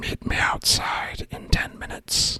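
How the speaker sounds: soft, close, quiet whisper. Sending a magic message into someone's ear: whispering. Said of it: "I'm going to whisper in his ear".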